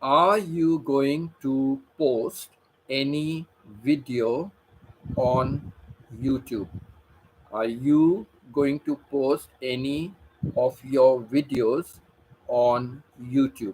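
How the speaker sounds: slow, unhurried delivery. Speaker addresses a viewer who may be using a translator; speaking slowly. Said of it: "I will speak slowly for you".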